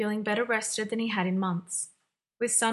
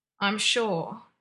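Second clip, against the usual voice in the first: words forced through clenched teeth. John answers Margaret after she explains the guest, speaking through gritted teeth. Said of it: "through gritted teeth".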